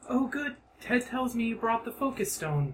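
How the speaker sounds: put-on girlish character voice. Voicing Bikela as she comes downstairs and sees the group, girl voice. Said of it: "I'm just gonna do girl voice".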